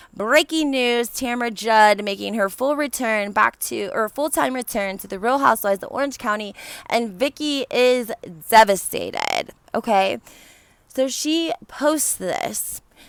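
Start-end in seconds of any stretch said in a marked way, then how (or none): none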